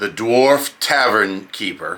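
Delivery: ordinary delivery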